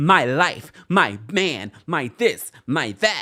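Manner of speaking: mock screaming in an annoying, grating voice. Speaker retelling a group conversation, imitating Kiara screaming. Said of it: "screaming at the top of her lungs with that annoying voice".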